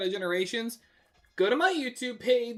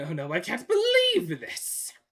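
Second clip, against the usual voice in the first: botched put-on voice, slow, drawn out, swinging pitch; 3 semitones lower than usual. Recalling a line while trying an Eggman voice: attempted Eggman voice. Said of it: "I can't really do an Eggman voice".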